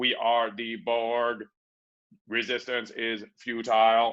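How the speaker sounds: slow, flat, level, droning robot monotone. Speaker illustrating one single voice for everything: monotone Borg voice. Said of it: "one monotone voice in which to speak because you are a robot".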